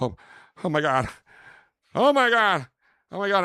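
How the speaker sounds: very loud, very high, rising panicked voice. Recalling the moment a pregnancy phone call came in, retelling a panicked freak-out. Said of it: "I'm freaking out".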